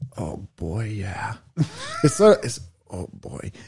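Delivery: soft, quiet, hushed put-on voice. Trying a Tobey Maguire voice after being asked to do it. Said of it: "Tobey Maguire from Spider-Man".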